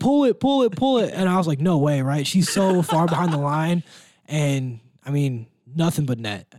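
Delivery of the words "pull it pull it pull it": mock shrill, very high, coach-style yelling. Retell how the coach sitting next to you reacted as she brought the ball up, imitating a coach yelling. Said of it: "he just starts yelling".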